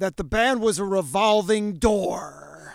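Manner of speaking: full broadcast-announcer style read. Interviewer quoting a guest's past remark back to them: full announcer voice. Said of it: "I'm going to do this in the full announcer voice".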